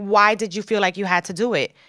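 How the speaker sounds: put-on crying, tearful voice. Retelling how mom reacted to the news, imitating mom crying. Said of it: "crying and she's like".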